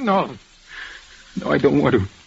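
soft, tearful, holding back tears. Told by Doc to let it out, he refuses, holding back tears. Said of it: "Let it out".

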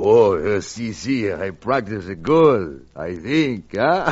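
put-on phony Spanish accent. A driver told to stick to his spanish dialect replies, fake spanish accent. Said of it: "better stick to that Spanish dialect".

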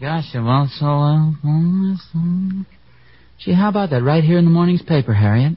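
muttering indistinctly, mumbled. Asking another speaker about something in the morning's paper: mumbling. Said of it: "you're just mumbling".

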